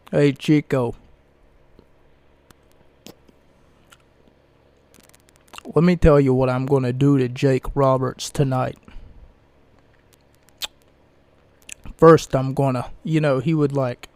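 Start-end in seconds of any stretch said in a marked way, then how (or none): 0.1-12.9 put-on Italian accent. Imitating Razor Ramon's promo talk: Razor Ramon Italian accent. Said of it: "he used to talk in, like, this Italian accent".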